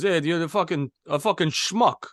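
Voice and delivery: put-on Portuguese accent. Telling a story about when they were younger, the speaker voices an older cousin: imitating Joe's Portuguese accent. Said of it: "so I'm gonna try to do his his uh, his voice".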